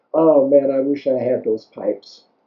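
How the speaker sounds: usual speaking voice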